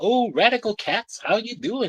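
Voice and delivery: put-on fifties cool-cat voice. Mocking how cartoon frogs talk, imitating fifties people talking. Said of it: "they talk like fifties people".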